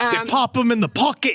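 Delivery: put-on British accent. Joking about someone getting the old treatment: put-on british accent. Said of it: "you're doing a British accent".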